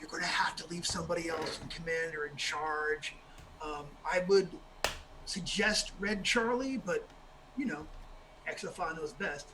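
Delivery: very quiet, low whisper, close to ear. Voicing the wizard Death, whispering into Kidney's ear: whispering very quietly. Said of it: "he whispers very quietly in uh, in Kidney's ear".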